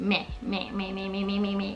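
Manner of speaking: whiny, sickly-sounding meh.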